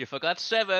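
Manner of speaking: very loud, high-pitched shout. Shouting outside to kobolds in a game scene: shouting outside. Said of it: "I shout outside".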